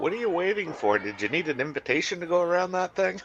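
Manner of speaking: high-pitched needling voice. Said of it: "As I used to say to the, one of the teams I coach".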